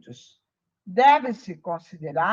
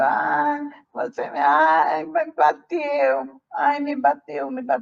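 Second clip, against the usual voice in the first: put-on small child's voice; 4 semitones higher than usual. Speaker retells how a spirit comes through to communicate, speaking in a child's voice. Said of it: "E com voz de criança".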